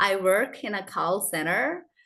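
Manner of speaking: slow, careful, deliberate American English accent. Showing learners how the line sounds in American English: American accent. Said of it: "in American, okay, you say, like".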